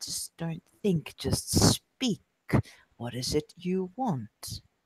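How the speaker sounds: slow, hushed, coaxing, seductive whisper. Acting out coaxing the beast out of another character: whisper. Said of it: "just sort of whisper".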